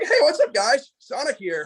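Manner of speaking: very high-pitched, swooping, animated voice. Showing a voice range from learning to voice Sonic: Sonic voice. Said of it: "when I did Sonic".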